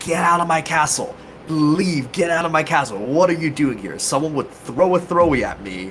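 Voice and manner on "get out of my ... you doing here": mock lordly, offended noble voice, barking yell. Retelling yelling at people from a castle tower: imitating yelling as a noble. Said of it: "I just started yelling at people".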